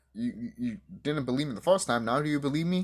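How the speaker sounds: ordinary delivery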